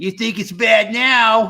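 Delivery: very high, loud, goofy cartoon-dad voice. Warning folks that things will get worse, do a Peter Griffin impression. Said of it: "That's my Peter Griffin impression".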